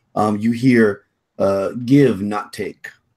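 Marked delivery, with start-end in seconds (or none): 1.8-2.8 slow, broken, halting words. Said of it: "it's kind of broken, uh, in the way the language is spoken".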